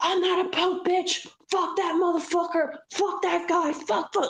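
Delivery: put-on, high-pitched screaming. Retelling how someone ran down the streets cursing: imitating someone screaming. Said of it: "And he's screaming".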